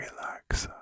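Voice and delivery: whispered word. Doing a whisper test at each ear, saying one word: whispering. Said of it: "I'm going to whisper a word".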